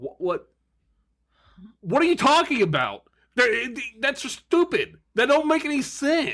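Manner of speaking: fed-up, exasperated outburst, high and rising. Reading a confusing review aloud to friends: frustrated. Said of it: "don't get frustrated".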